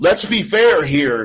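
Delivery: sarcastic air-quote emphasis on the word fair. Arguing about a film's plot with a co-host: sarcastic stress on "fair". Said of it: "I say fair with a little bit of sarcasm".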